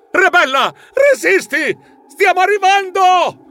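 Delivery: very high, ringing, rousing yell. The narrator bursts in calling out to a companion, shouting. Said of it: "entrai gridando".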